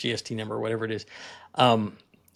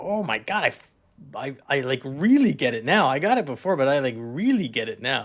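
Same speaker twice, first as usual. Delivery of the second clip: play-acted, gushing, bursting with excitement. Retelling the other speaker's excited message: imitating excited voice. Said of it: "you could hear the excitement in your voice".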